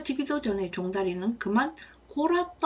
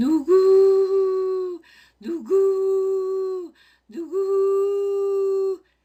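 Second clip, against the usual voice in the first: high, loud hooting like an owl; 8 semitones higher, 7 dB louder than usual. Telling a knight's story, trying the challenge again, hooting like an owl. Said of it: "딱 올빼미처럼 말하지 않았나요? 다시 해볼게요".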